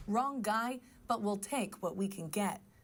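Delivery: ordinary talk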